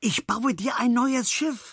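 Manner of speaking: very high, thrilled, excited calling out. Arriving at a barrel in the reeds, he calls out excitedly. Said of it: "rief er aufgeregt".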